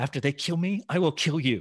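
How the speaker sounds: mumbling quietly, as if to oneself. Retelling staring at the pickup: retelling a mutter under breath. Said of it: "I'm muttering".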